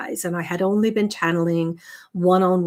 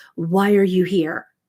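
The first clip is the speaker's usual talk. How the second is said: put-on big, commanding, powerful booming voice; 4 dB louder than usual. Retelling what a voice said during astral travel: booming, powerful voice. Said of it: "this booming, powerful voice that said".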